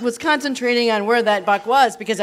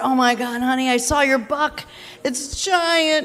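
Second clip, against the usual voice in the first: put-on frantic, worked-up, thrilled, excited freak-out; 3 semitones higher than usual. Retelling a phone call to her husband about a huge buck: retelling freaking out. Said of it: "And I was freaking out".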